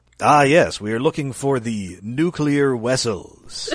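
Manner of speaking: very slow, drawn-out speech in a bad Russian accent. Joking about a Star Trek actor's famous accent: George Takei's bad Russian accent. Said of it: "George Takei known for his famous, uh, bad Russian accent".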